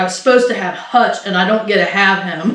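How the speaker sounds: usual speaking voice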